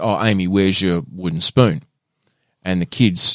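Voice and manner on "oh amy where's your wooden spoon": ordinary delivery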